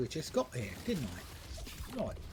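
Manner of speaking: very bad fake British accent, slow, breathy, whispery. On a stream, saying a line in the worst British accent. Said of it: "That was the worst British accent".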